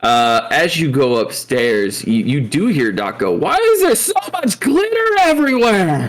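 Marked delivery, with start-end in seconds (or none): 3.3-6.1 screaming character voice, higher pitch. Voicing Doc as he screams about the glitter: Doc screaming. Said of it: "He's just screaming in general".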